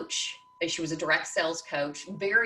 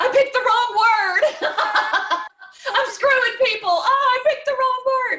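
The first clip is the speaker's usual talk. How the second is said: high, loud laughter with dismay. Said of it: "because I'm like".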